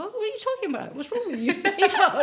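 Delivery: naive, baffled protesting tone, high and fast.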